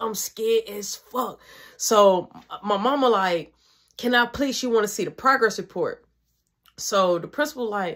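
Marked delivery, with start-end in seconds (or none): none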